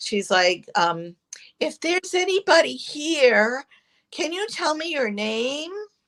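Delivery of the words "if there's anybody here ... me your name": sweet little lady's voice, pitched up, words stretched. Retelling what a sweet lady asked the room, imitating Nancy Leathers' little voice. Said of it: "got this little voice".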